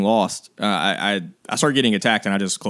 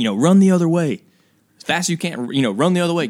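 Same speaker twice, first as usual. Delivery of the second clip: imitated yelling; 8 semitones higher than usual. Recounting a wall of yellow jackets between them, imitating stepdad yelling. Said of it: "he's yelling at me".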